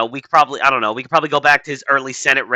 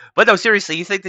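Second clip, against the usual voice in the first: ordinary delivery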